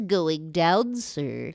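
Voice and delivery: cartoon hound character voice. Quizzing the other speaker on an impression: Droopy Dog voice. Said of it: "Can you tell me what impression this is?".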